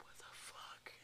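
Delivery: shocked whisper. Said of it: "I'd be like".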